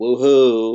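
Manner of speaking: loud, flat, deadpan, unexcited sarcastic cheer. Reading a chat message without exclamation points: sarcastic unexcited 'woohoo'. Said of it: "I'm almost wondering if it's sarcasm, like woohoo".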